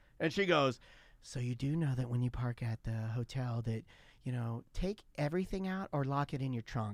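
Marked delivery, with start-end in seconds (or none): 1.2-7.0 mimicked condescending, patronizing tone, lower and quieter. Retelling how his wife warned him about the hotel parking: imitating his wife's condescending voice. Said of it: "this is the type of voice she was using".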